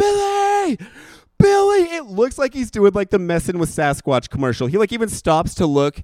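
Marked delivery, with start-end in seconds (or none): 0.0-1.8 very high, piercing, loud screamed words. Retelling running alongside a car calling to Billy, retelling a scream. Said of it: "screaming at the top of my lungs".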